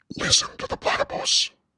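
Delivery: hushed whisper breathed close into the ear. Retelling how a stranger spoke right in the ear: imitating a whisper. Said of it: "he just whispers right in my ear".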